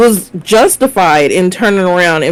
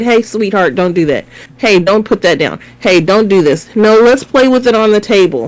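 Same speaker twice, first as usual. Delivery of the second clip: put-on loud, raised voice; 2 semitones higher than usual. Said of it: "I'm saying it loud enough".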